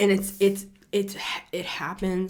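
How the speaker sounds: stammering, stuttering, tripping over words. Explaining a transformational process, stuttering. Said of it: "I'm stuttering".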